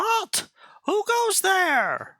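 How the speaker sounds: shrill, very high-pitched jester shriek. Narrator voicing a tall jester creature, high-pitched shriek. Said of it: "With a high pitched voice, it shrieks".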